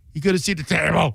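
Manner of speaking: put-on throaty voice. Describing a favorite bit of how Trump talks: throaty Trump impression. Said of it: "He'll go into like the throaty Trump".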